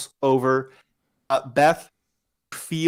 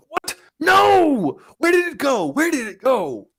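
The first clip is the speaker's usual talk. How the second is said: enraged, very high, very slow, drawn-out voice; 12 semitones higher than usual. Game master voices an unseen figure in the room ahead of the players: angry voice. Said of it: "you hear an angry voice".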